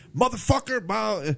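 loud in-your-face yelling. Contrasting two actors reading a Pulp Fiction part, imitating Samuel L. Jackson's loud yell. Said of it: "just so loud and in your face".

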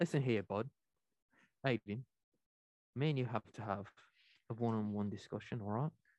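mock accent sounding Scottish. Playing a Brit demanding a one-on-one talk with Aiden, in a fake Scottish-sounding accent. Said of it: "Why do you sound like Merida?".

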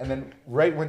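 ordinary talk, nothing marked

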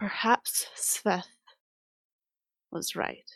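barely audible whispered mutter under the breath. After a long silence following your apology, she says it muttered under her breath. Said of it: "you like barely hear this under her voice or under her breath".

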